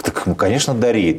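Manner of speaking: acted-out surprised, taken aback yet agreeable tone. Retelling a classmate's offer of a gift, replying: acting out own surprise. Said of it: "Я еще так удивился".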